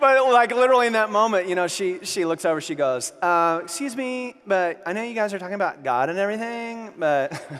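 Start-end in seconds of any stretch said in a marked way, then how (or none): 3.2-7.4 woman's voice, cutting in. Retelling what an unhappy woman on her phone said: imitating Celine. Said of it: "I've got a great impression of her voice".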